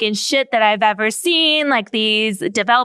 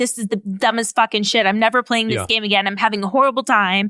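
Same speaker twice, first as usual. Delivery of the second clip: ordinary talk, nothing marked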